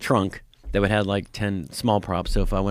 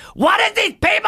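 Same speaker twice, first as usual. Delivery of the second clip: very high, shrill, very loud comic character voice; 9 dB louder than usual. Showing another speaker an impression: Gilbert Gottfried voice. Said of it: "I can do a Gilbert Gottfried".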